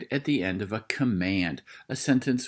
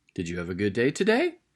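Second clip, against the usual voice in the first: pitch climbing in a lilt on today. Demonstrating how to read a question aloud, with rising question intonation. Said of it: "You hear my voice go up".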